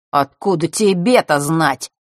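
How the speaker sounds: scornful, contemptuous, hard stress on 'тебе'. Threatened with a dagger by a girl, he answers her, contemptuous, stressing «тебе». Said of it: "презрительно произнес Марк".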